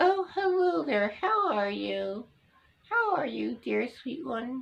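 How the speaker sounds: high little ventriloquist hand-puppet voice. Showing how a ventriloquist made his hand talk: ventriloquist hand-puppet voice. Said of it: "make a little bit mouth suggestion like this".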